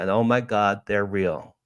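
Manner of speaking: acted, tearful, overwhelmed crying out of words. Retelling seeing a flashing light and crying: retelling own crying words. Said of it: "Now I'm crying".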